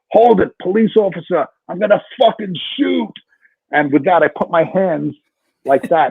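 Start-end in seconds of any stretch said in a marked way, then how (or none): 0.1-3.1 play-acted hard wartime voice, pitched up. Retelling calling out to a man attacking a cop: imitating own war voice. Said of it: "With my war voice".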